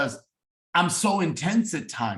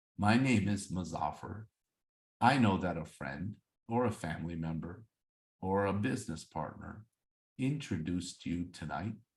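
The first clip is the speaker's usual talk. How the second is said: very low, very quiet, flat and mumbled; 8 semitones lower, 10 dB quieter than usual. Showing a bad way to open a Zoom welcome, flat, unexcited delivery. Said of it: "if I start off the Zoom like this".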